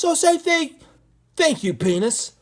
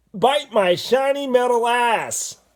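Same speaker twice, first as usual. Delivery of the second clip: animated cartoon robot voice. Speaker shows off an impression he used to be good at, Bender voice. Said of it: "I used to be good at Bender".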